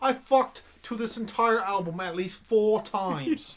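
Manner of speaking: put-on British accent. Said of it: "[name]'s become Simon Cowell".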